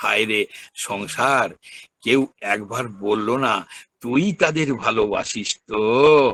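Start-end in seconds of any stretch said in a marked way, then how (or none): none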